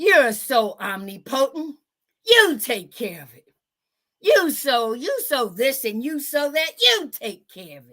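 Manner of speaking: dripping, mocking sarcasm in swooping sing-song. Showing how a passage could be read sarcastically: sarcastic. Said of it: "being in a sarcastic way".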